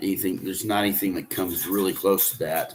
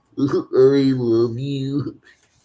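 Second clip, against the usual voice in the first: high, loud, projected character voice; 6 semitones higher, 5 dB louder than usual. Showing people who ask where he acted: Barney voice. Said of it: "So I do the voices".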